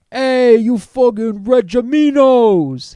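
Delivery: very loud, high, booming put-on Brooklyn accent. Reading out a written message marked for a Brooklyn accent, Brooklyn accent. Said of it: "Parentheses Brooklyn accent".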